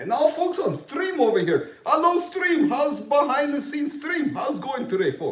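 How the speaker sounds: put-on Russian accent, very high-pitched. Greeting the viewers on the stream, in a put-on Russian accent. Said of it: "I can bring voice from Poland, the Rusky voice".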